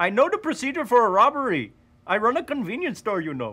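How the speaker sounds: put-on Indian accent. Showing an actor how to do the Apu line: Apu accent. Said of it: "Do Apu".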